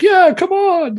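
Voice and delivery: high, loud calling out. Describing the boss calling the player as they approach: Dung Defender calling out. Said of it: "calling you, like".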